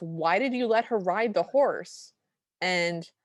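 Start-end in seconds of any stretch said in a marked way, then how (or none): none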